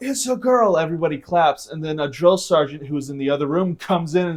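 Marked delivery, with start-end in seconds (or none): 0.0-0.8 put-on very high shout. Retelling announcing a baby girl to everyone: imitating own yell. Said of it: "so I yell out".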